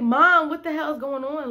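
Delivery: mock full-on scream, high and loud. Retelling a scene where everyone ran from sirens: imitating own screaming. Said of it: "I was screaming".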